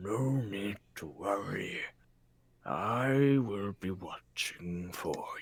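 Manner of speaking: faint whispered voice. In an actual-play game, a cherry blossom tree speaks to the party in a very faint whisper. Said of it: "and he goes back to looking exactly like a normal cherry blossom tree. / Well, if you rest under me, I assure you, you shall be under my protection".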